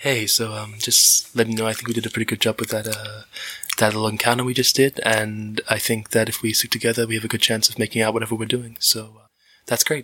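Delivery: intimate asmr delivery, right up close. Voicing Unit six casting Bless on the party, speaking ASMR. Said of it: "he just speaks A S M R to you guys".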